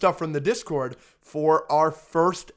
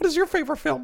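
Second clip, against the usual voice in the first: put-on voice, pitched very high; 11 semitones higher than usual. Asked if it is an impression of them, imitating the listener's voice. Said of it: "Yeah, this is how you sound".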